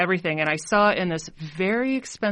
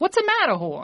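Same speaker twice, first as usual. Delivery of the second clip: put-on New Jersey accent, much higher; 12 semitones higher than usual. Saying the business name the way the office mate told them: Jersey Boys accent. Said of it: "you have to say it like you're in Jersey Boys".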